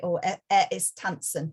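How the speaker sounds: ordinary delivery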